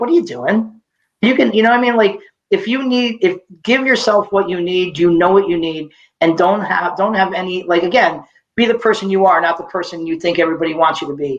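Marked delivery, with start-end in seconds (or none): 0.0-0.8 scolding like a nagging parent. Retelling the voice in their head while lying on the couch: imitating my parents' nagging. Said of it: "I sounded like my parents".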